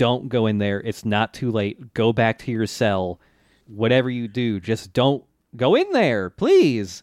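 ordinary delivery

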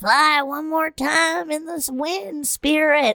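put-on high kid voice. Retelling a cartoon scene, a speaker does a Bobby impression. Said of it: "You do a really good Bobby impression".

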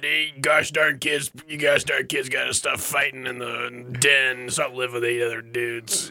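put-on gruff, rough actor voice. Imagining a dad scolding kids for fighting, as Nick Nolte. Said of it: "as Nick Nolte".

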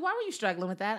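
plain

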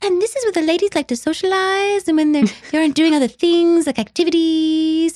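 put-on really adorable, high-pitched girlish voice. A speaker describing an actress on Murphy Brown imitates her adorable high-pitched voice. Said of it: "really adorable sort of a high-pitched voice".

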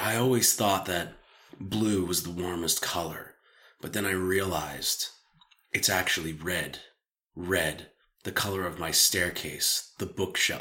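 low, hushed, theatrical dramatic delivery. Illustrating a monologue to a co-host, in a dramatic monologue voice. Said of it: "I like your dramatic voice that you doing just now".

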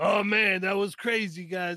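plain, everyday conversational speaking voice. Imitating how a friend talks after logging off: imitating Lago's way of talking. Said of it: "that's the way that Lago talks".

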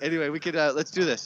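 ordinary talk, nothing marked

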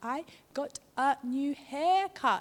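very slow speech, every word clearly pronounced. Imitating a friend telling about a new haircut: imitating slow, clear speech. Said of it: "He speaks so slow and clear".

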